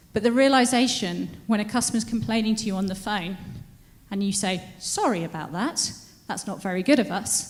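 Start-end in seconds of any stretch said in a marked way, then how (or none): 4.8-7.5 mock, sarcastic-sounding delivery. Acting out an apology to a customer complaining on the phone, sarcastic apology. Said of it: "I sound really sarcastic as I say that".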